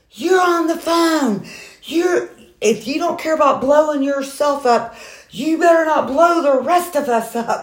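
put-on high, slow, angry older man voice.

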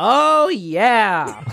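high, boisterous wrestling-promo style bellow. Channeling a wrestler while cutting a promo, a Kool-Aid Man impression.

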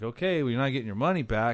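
normal talking voice

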